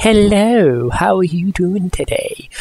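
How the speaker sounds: attempted smooth, sophisticated charm that sounds creepy. Trying out a voice like one heard in Japanese trailers, attempted suave, sophisticated voice. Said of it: "that was supposed to sound suave and sophisticated".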